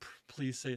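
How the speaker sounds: mock pleading, begging voice. Retelling hoping a guest says they like scotch: imitating pleading prayer. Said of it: "Just praying".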